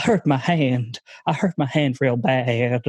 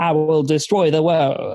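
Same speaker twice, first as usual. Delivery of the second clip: put-on hammy, slow, over-the-top Southern accent, r's as w's; 2 semitones higher than usual. Speaker describing a comedy series villain, doing his over-the-top Southern villain voice. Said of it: "very over the top Southern character who talks a little bit like this".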